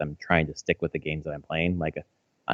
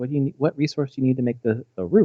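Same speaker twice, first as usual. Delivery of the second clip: put-on high-pitched little-kid voice. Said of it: "And she's like".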